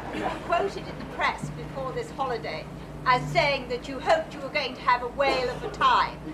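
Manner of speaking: put-on tightly clipped English accent, very high pitch. Retelling a woman's question at a q&a after a show, very clipped english accent. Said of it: "in the most clipped English accent I've ever heard".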